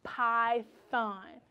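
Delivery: elongated, stretched-out word. Leading listeners to say the word along, stretched-out word. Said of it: "I want you to stretch it".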